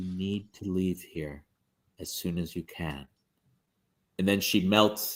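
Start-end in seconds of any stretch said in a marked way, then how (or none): 0.0-3.1 very quiet, low, hushed half-whisper. Voicing a woman who grabs Cuthbert's sleeve in the crowd: hushed half-whisper. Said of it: "she whispers in a hushed tone".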